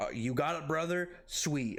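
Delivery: ordinary talk, nothing marked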